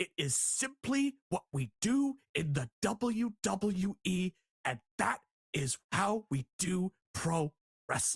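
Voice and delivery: slow, emphatic, lawyerly, point-by-point emphasis. Imitating how a wrestling figure talks: Paul Heyman impression. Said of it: "you know the way he talks".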